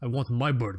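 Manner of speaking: put-on really weird, laid-on Russian accent. Breaking off from describing a watch to quote Iron Man, in a weird Mickey Rourke Russian accent. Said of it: "like a really weird Russian accent".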